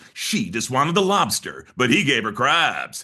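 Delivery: epic movie-trailer voiceover announcer delivery. Showing how old movie trailers sounded: Don LaFontaine trailer voiceover. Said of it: "the Don LaFontaine voiceover".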